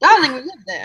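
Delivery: frog character voice. Voicing a frog greeting Ava: frog character voice. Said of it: "looks up at Ava and goes".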